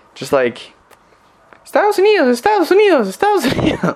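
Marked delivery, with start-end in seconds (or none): 1.7-4.0 weird, super high-pitched, parrot-like repeating voice. Imitating a strange lady who repeated herself over and over, super high-pitched parrot voice. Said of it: "like a super high pitched, like weird voice that sounded kind of like a parrot".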